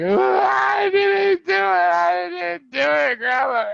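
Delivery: mock very high, drawn-out weepy wailing. Retelling pleading with a grandma as a child, imitating own crying. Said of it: "I'm already crying like".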